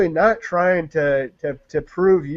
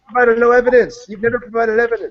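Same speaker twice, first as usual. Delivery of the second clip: heated, angry voice with raised pitch; 5 semitones higher than usual. Arguing back at someone over providing evidence: angry. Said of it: "Why are you so angry".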